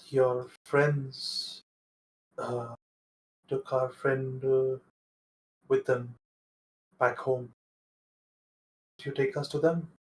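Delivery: hushed, soft half-whisper. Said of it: "So what are you whispering?".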